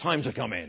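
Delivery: low, hushed, ominous, scary calling voice. Telling how a mum calls kids in from the garden, imitating a scary mum voice. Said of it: "Mum's is a more scary voice".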